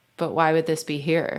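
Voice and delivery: ordinary talk, nothing marked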